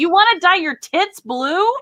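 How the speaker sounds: mock dad-voice hollering. Retelling how her father yelled across a store aisle: imitating dad yelling. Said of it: "he turns and yells to me".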